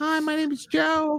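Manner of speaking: put-on very high, slow prepubescent boy voice. Teasing another speaker about how their voice sounds: imitating Joe's prepubescent voice. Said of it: "who's this prepubescent Joe that we have?".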